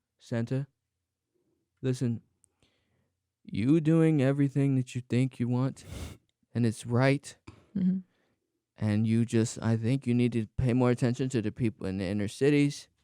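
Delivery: acted stoned, high-sounding voice. Improv scene, speaking to Santa, playing someone who is high. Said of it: "This is your high impression".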